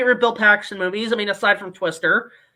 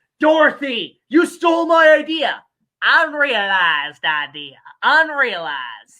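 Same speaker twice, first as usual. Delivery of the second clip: slow, drawn-out, put-on Southern accent. Quoting Twister, mocking a British actor: imitating Cary Elwes's fake Southern accent. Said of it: "a British guy trying to do a Southern accent".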